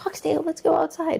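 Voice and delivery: very high, raspy, squeaky, creaky gremlin voice. Being silly, running up on Foxtail to go outside: little gremlin voice. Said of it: "in, like, the, the little gremlin voice".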